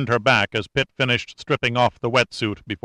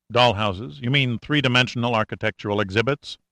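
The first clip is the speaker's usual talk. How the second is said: plain reading voice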